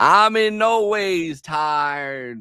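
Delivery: put-on Southern drawl, very slow, tired and stretched. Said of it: "Hillary Clinton did it too".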